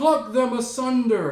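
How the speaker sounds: high-pitched, loud, kingly royal yell. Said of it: "Claudius the king yells out".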